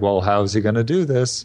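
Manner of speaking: normal talking voice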